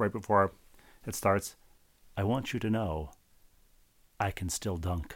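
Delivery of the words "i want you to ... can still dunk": quiet, soft-spoken, hushed confiding voice. Retelling what the guy said before the curtain went up: imitating a soft voice. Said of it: "said in a soft voice".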